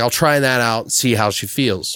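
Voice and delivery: ordinary talk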